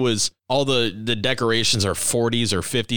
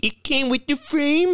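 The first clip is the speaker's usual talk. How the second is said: very high-pitched taunting voice. Describing a movie scene, doing Rumsfeld's mocking imitation of another man's line. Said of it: "Rumsfeld mockingly does his voice going".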